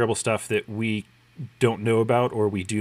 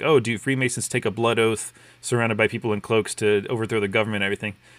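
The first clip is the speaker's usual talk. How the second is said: plain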